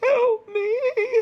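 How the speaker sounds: shrill, very high and loud wailing cry. Voicing an unseen survivor calling out amid bodies: calling out for help. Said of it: "you hear another voice calling out".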